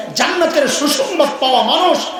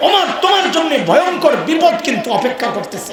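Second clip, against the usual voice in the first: normal talking voice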